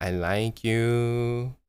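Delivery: put-on drunken speech. Retelling a late call from a woman: imitating a drunk person. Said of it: "And she's super drunk".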